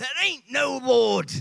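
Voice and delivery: furious, rough-edged yell. Telling about an elderly lady's atheist neighbor, the speaker is imitating an angry shout. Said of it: "He would shout".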